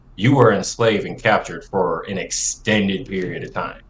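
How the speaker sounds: normal talking voice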